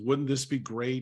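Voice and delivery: ordinary delivery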